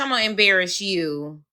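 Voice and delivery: ordinary talk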